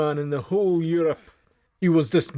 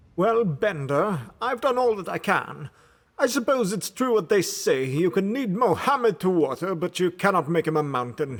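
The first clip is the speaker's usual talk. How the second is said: imperious, haughty, with lofty disdain; 3 semitones higher than usual. Narrator reading a detective story, Filson speaking to Bender; imperious Filson voice. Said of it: "I knew his imperious ways by this point. / [name] was the smartest man in the whole Europe. He was dismissive of lesser men, / he said. / I knew his imperious ways by this point".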